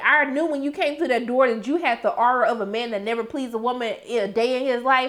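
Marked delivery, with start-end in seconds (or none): none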